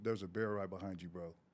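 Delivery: mock casual, calm, hushed, unbothered tone. Retelling a warning to a friend about a bear behind him: imitating saying it calmly. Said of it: "Did you say it that calmly".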